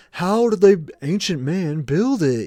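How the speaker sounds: slow, drawn-out cable-documentary TV narrator voice. Speaker mimicking people wondering how the pyramids were built, Ancient Aliens guy voice. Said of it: "my uh, ancient aliens dude voice".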